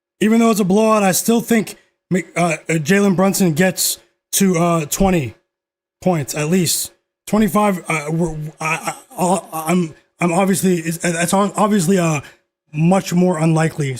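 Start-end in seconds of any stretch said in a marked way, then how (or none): 7.9-14.0 stuttering, tripping over words. Talking to listeners about a game prediction, stuttering. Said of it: "So sorry for stuttering".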